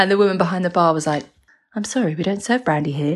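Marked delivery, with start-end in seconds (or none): 1.7-3.2 put-on flat, deadpan delivery. Retelling what the woman behind the bar said when asked for brandy, retelling a deadpan reply.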